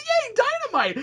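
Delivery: put-on high, gleeful, delighted little burst of cheer. Describing an odd cartoon party scene: imitating a delighted laughing lady. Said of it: "has this giant smile on her face, and she looks like she's laughing".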